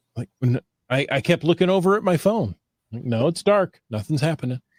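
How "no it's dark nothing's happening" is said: ordinary delivery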